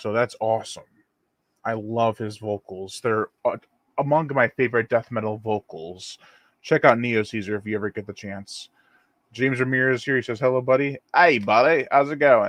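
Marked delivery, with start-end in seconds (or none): 10.4-12.5 put-on Australian accent. Greeting listeners, the speaker slips into a mock australian accent. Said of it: "I'm talking Australian to you guys".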